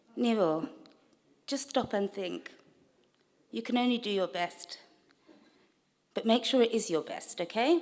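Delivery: honeyed, sugar-sweet, sweetest possible voice. Giving a speech, imagining what Auntie would say: imitating Auntie's sweetest voice. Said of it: "She would say in her sweetest voice".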